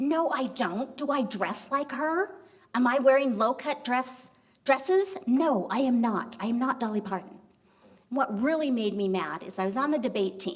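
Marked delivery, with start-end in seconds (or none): 0.0-7.4 defensive-sounding voice. Retelling a reply to people in high school: imitating own defensive retort. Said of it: "I'd get really defensive".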